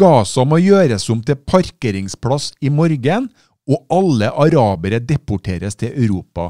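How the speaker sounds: ordinary talk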